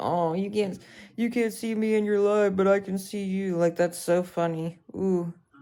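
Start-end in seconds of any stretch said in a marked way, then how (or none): 0.0-3.6 mocking, put-on smug voice. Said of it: "they think they're so funny".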